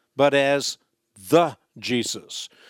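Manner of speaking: stress on "the".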